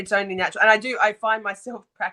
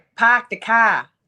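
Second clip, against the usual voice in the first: loud Boston-style accent and pronunciation; 6 dB louder than usual. Showing they have the accent down, speaker says the phrase in a Boston accent. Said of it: "I've got my Boston Boston accent down pat mostly".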